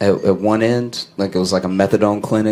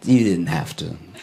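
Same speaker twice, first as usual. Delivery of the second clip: put-on whispered delivery; 3 semitones lower than usual. Imitating a dean at graduation handing over a diploma: imitating a whisper. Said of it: "whispering in your ear".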